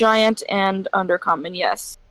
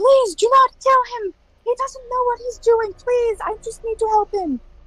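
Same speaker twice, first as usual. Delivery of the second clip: very high, tiny voice for a giant. Voicing a giant character pleading for someone, in a high voice for a giant. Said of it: "Speaks in a high voice for a giant".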